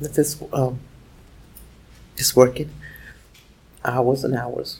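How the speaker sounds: very quiet whispering voice. Answering questions as a witness, whispering. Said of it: "you're whispering".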